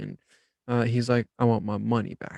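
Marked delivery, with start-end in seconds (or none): 1.4-2.4 put-on confrontational, aggressive, demanding tone. Retelling a man who slapped an item down at the service desk, imitating a loud, aggressive tone. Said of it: "in like this loud, aggressive tone".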